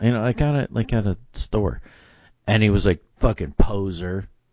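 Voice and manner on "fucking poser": imitated angry male voice, lower. Retelling a stranger's final insult: imitating an angry insult. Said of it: "he was all mad at me".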